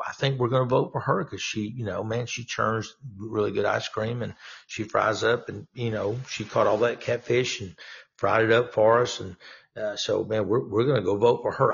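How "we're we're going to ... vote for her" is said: ordinary talk, nothing marked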